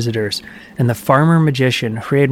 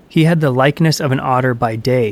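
ordinary delivery, nothing marked

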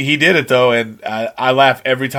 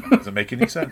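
put-on deadpan, quieter; 6 dB quieter than usual. Quoting a part they liked, the speaker gives the reply: retelling a deadpan reply. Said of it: "I like the deadpan response to that line".

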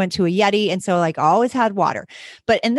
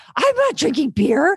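high, frazzled, panicked, freaked-out voice; 7 semitones higher than usual. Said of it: "I'm freaking out and I'm like".

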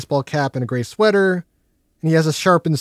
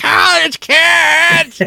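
put-on high, loud, shrill yell with "kids" drawn out; 13 semitones higher, 6 dB louder than usual. Retelling how a man yells at some college kids, imitating a yell. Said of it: "he's just yelling at them".

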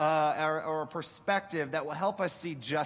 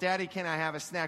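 put-on cute little-girl voice. A father retells Nyla asking him for a snack, in Nyla's cute little-girl voice. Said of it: "she had that cute little voice".

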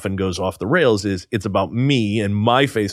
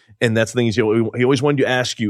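usual speaking voice

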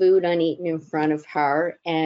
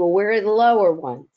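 play-acted sharp, barking voice; 2 semitones higher, 4 dB louder than usual. Retelling how a woman barked at the speaker; retelling a sharp bark. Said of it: "she barked at me".

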